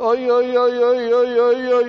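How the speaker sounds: high, drawn-out hollering shout. Retelling how a man called sheep across a field, banging a bucket: imitating David shouting. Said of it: "he was shouting like".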